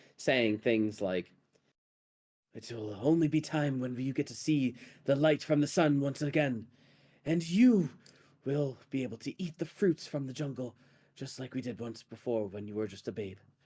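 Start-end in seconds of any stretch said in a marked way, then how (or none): 2.6-13.4 speaking in hushed tones. Voicing a figure talking quietly amongst rats in a cavern: hushed voice. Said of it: "talking amongst the rats in a hushed voice".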